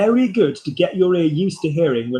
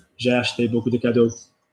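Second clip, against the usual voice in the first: low, flat robotic monotone, no interest at all; 5 semitones lower than usual. Showing how to say the sentence like a robot with no interest: flat robotic monotone. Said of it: "say it like a robot with no interest".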